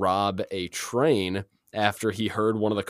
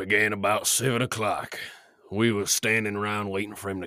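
gritty, put-on Western voice. Getting another try after being cut off, doing a gritty Western accent. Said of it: "To give you like a gritty".

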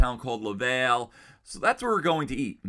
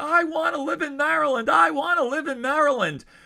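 put-on very high-pitched crying child voice, pleading tone; 3 dB louder than usual. A dad retelling what his crying child said: imitating a child crying. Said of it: "she's like crying".

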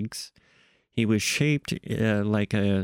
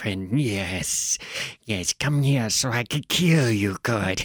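hissing, puffing, pseudo-European put-on voice. Describing a character who talks through translated chemicals, doing his hissing, puffing voice. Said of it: "they come out in like a hiss and a puff".

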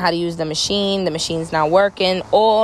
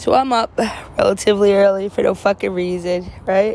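yawning while speaking, slower; 3 semitones higher than usual. Telling about getting up early for work, yawning. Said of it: "I'm yawning".

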